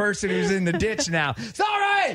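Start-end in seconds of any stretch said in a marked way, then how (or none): 1.3-2.1 very high, loud yelling. Acting out a driver passing a crash: yelling out a car window. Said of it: "You're yelling out the window".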